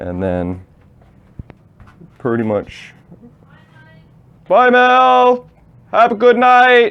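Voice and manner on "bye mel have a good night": very high, very loud yell, one word stretched out. Pausing mid-explanation to call goodbye to a departing guest, yelling. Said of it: "sorry for yelling in your face there".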